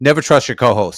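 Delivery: solemn, dead-earnest, dead-serious tone. Retelling a comedy lesson from James: imitating his dead-serious tone. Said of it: "he looked me dead in the eyes, and he said, seriously".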